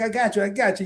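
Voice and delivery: put-on New York counterman accent. Retelling ordering pizza in Manhattan, imitating a guy's New York accent. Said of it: "with the accent and all that other stuff".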